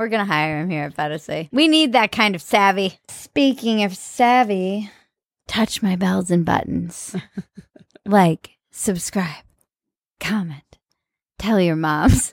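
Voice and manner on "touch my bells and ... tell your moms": put-on seductive voice, pitched lower. Asking viewers to like and subscribe as a joke: put-on sexy voice. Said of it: "And the sexy voice".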